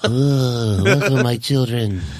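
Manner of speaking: put-on alien-like voice, long drawn-out "Oh". Joking while watching a scene with others: Marlon Brando voice. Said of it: "Marlon Brando".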